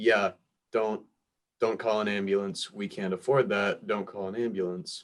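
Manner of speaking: ordinary delivery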